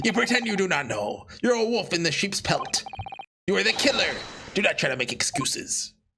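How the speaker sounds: bad put-on French accent. Reading a character's lines aloud: very bad french accent. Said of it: "a very bad French accent there".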